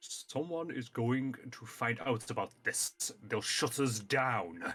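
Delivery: distinct, separate, darker character voice. Reading a story aloud, the narrator voices one character in a deeper voice. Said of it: "In a deeper voice".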